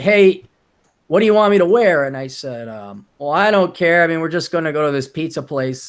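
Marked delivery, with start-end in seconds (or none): 0.0-2.0 loud yelled delivery, called out. Retelling being in the shower as the girlfriend calls out, imitating her yelling. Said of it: "the GF yells like".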